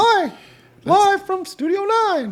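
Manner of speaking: shrill, very high, loud cartoon mouse voice. Joking around, the speaker says a greeting in a Mickey Mouse voice. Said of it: "It's my shirt talking because Mickey Mouse".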